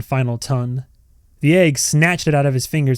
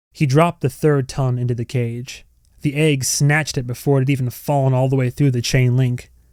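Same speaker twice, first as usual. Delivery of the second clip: plain reading voice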